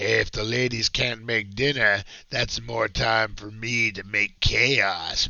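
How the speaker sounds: put-on devil character voice. Reading out an old ad in which Satan speaks: Satan devil voice. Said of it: "That's my best devil voice".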